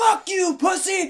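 very loud, shrill, high-pitched scream. Speaker acts out screaming at the TV after shooting someone, retelling screaming at the TV. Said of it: "I'm screaming at the TV and shit".

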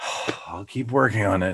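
acted-out, fed-up, exasperated teenager tone. Recapping a scene, the speaker quotes B'Elanna's reply to the captain: B'Elanna as mock-exasperated teenager. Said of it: "She sounded like this exasperated teenager".

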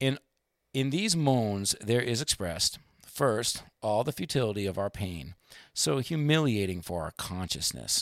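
ordinary talk, nothing marked

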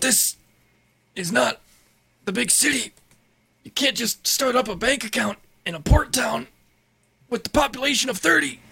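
put-on elderly man's character voice. Acting a scene with a traveler from a far-off land, old man voice. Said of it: "Losing my old man voice".

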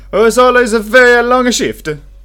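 shrill, blaring, bad fake Italian accent. Answering a remark about a long shift, in a bad Italian accent. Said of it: "My Italian accent is not so good".

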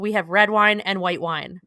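mock dismissive curt tone. Retelling a bartender's answer about the wine: imitating a dismissive get-out-of-my-face tone. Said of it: "kind of with, like, a "Get out of my face."".

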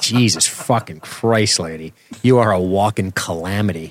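plain

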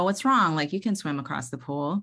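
usual speaking voice

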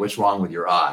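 ordinary talk

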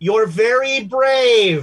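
loud, slow delivery. Retelling what the orderly said to Abe, super loud and slow. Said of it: "in like super loud and slow Spanish".

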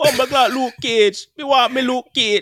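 very high-pitched, put-on fake Jamaican accent. Quoting film characters' lines to another speaker, in a fake jamaican accent. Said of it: "What kind of fake Jamaican accent did they have?".

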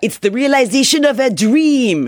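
put-on French accent on English words. Quoting a flyer's words to a newspaper: mock French accent. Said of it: "Please don't make fun of the French accent".

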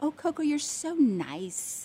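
put-on creepy, oily, slimy voice, slow and stretched. Retelling how a man from the show praised Coco, imitating a slimy delivery. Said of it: "the way he said it was like, I need to take a bath".

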